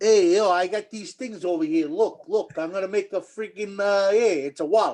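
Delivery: Italian-American Brooklyn accent, street-seller's pitch. Asked to impersonate an Italian guy from Brooklyn selling balloons, Brooklyn Italian accent. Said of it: "do your best impression of an Italian guy from Brooklyn".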